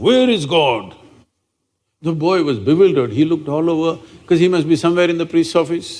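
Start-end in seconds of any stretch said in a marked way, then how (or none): 0.0-1.0 big, loud, booming voice. Telling how a priest suddenly asked a bewildered boy a question, retelling a booming question. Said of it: "with a booming voice he asked".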